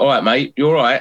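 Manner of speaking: normal talking voice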